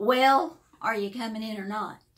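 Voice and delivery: big, booming, very loud voice. Retelling how a woman inside called out as the speaker turned to leave, big booming voice. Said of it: "this big, booming voice said".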